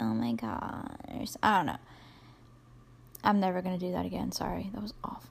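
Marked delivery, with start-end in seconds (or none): 0.0-1.8 put-on drawn-out, swooping valley girl voice. Showing how to soften one's voice, speaking like a valley girl. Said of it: "you're speaking like a valley girl or something".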